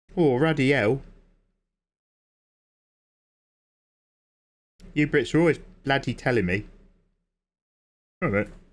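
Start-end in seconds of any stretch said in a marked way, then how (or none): 0.1-6.6 fake Australian accent, higher. Joking while showing off a painting brush: put-on Australian accent. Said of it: "That's my Australian accent".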